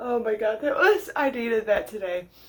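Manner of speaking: laughing hard while talking. Reacting to a misread quote on a paper, laughing hard while talking. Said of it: "I'm laughing so hard I'm crying".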